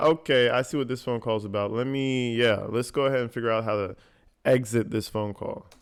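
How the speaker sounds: plain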